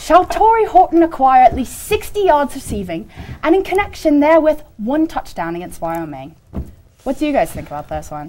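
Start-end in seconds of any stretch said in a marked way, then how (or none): 0.0-6.3 reading aloud in a British accent. Reading a requested ballot question aloud: British accent. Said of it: "I was requested to read these in a British accent".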